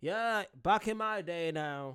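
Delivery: trying for American accent. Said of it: "I'm trying to have an American accent".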